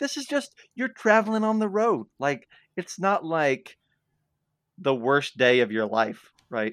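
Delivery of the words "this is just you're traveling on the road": very high-pitched, exasperated complaining tone. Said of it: "I'm like".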